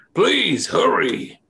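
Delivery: big yell from afar. Game master voicing a single voice calling to the players from beyond an alley, booming yell. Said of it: "But he yells it".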